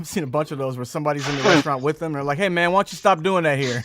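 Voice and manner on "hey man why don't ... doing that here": mock annoyed tone, higher and louder. Retelling a diner scolding someone filming a food review: imitating an angry diner. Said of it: "when somebody's mad at the person".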